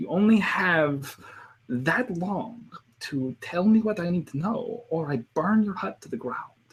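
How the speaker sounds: put-on German accent, high and soft. Recalling a favorite German character, the speaker quotes a line in a German accent. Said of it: "one of my favorite German characters".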